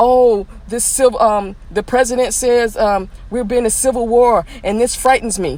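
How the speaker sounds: ordinary delivery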